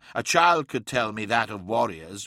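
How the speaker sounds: ordinary delivery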